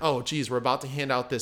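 usual speaking voice

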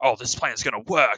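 put-on Australian accent, laid on thick. Retelling the commander's plan from a video: thick fake australian accent. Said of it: "really thick, fake Australian accent".

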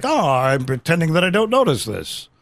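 strained, forced attempt at sounding calm and composed. Imitating a president trying to look unbothered: imitating someone trying to look composed. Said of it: "he's trying to be composed, like".

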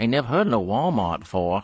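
put-on high, full, quintessential Maine accent. Retelling a gas station attendant in Maine talking to lost travelers, quintessential Maine accent. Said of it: "quintessential maine accent".

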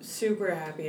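plain

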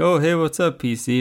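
high, easygoing, cool and relaxed, tossed off. Retelling a scene where the Mac guy greets the PC, putting on the cool Mac guy. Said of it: "the Mac guy's like all cool".

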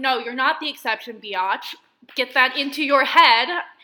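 loud, worked-up ranting. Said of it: "I feel like I sound so heated".

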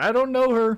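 uncomfortable, awkward voice. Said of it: "He's like".

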